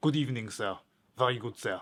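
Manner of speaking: exaggerated comic French accent. Describing the comic character Sabot from a play, in his silly French accent. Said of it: "he has a silly French accent".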